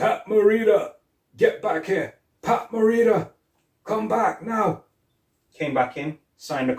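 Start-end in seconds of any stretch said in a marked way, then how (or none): 0.0-4.8 play-acted very high-pitched hollering. Retelling how Jerry Weintraub shouted from a window: imitating Jerry Weintraub shouting. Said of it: "who was mimicking him".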